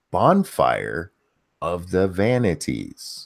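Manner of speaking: very slow, deliberate, each word drawn out. After once garbling a movie title, saying it again very slowly. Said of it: "I'm going to say this very slowly".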